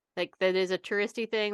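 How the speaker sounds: normal talking voice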